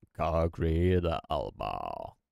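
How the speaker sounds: put-on nasal robotic voice. Showing listeners how to imitate an AI voice, nasal Concrete Elbow AI voice. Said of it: "hold your nose like this".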